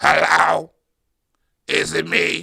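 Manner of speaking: very slow, drawn-out, raspy, rough-in-the-throat phone voice. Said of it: "You sound like [name]".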